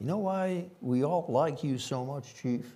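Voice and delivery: put-on delightful Southern accent. Quoting a woman who was holding onto you, use her delightful Southern accent. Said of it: "she had this delightful Southern accent".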